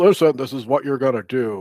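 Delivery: giant booming, thundering voice from the heavens. Retelling a scene where a giant speaks to shrunken people: giant booming voice. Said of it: "giant booming voice from the heavens".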